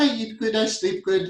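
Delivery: put-on affectionate playful Indian accent. Talking about mindfulness, the speaker quotes his guru in india: lovely fun indian accent. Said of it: "In his lovely, fun Indian accent".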